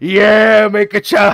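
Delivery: very loud, high-pitched scream. Describing a guy who barges into your home, mock screaming. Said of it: "starts screaming about how".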